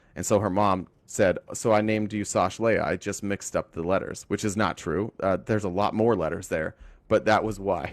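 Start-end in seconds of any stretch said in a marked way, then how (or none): none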